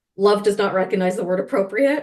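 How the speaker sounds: ordinary talk, nothing marked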